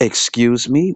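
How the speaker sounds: high, acted-out voice dripping with attitude. Describing how they say it instead of apologizing; imitating someone with attitude. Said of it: "with attitude".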